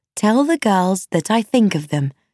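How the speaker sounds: plain reading voice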